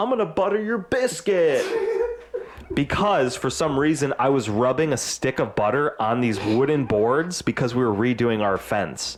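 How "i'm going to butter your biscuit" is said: high, mocking jeering tone. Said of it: "try and mock them and be an asshole".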